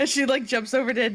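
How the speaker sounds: usual speaking voice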